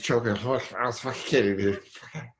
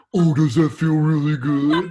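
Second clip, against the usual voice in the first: very loud, mocking, parroting tone; 4 semitones higher, 9 dB louder than usual. Showing how to repeat a boyfriend's words back: mocking tone. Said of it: "say it back in the mocking tone".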